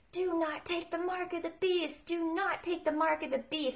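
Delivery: put-on high-pitched screaming, said twice over. Retelling a dream of warning women at an ATM: imitating own screaming. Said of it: "I started screaming at them".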